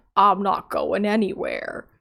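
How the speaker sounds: creepy, eerie, unsettling, sinister put-on voice. Retelling a scene where a man answers his nosy neighbor: put-on creepy voice. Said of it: "creepy voice".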